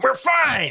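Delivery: very high, shrill yell. Imitating George C. Scott yelling at the nurse: imitating George C. Scott yelling. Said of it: "George C. Scott yelling".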